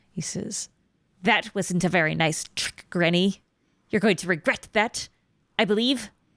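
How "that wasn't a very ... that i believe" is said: hissing, sibilant, snake-like, menacing creature voice. Game master voicing a kobold speaking to granny, hissing kobold voice. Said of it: "he hisses at you and he says".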